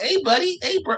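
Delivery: very high, chummy, put-on Canadian guy voice. Mocking how a canadian dude sounds when you hear him talk, imitating a very high-pitched canadian. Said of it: "His voice is very high pitched".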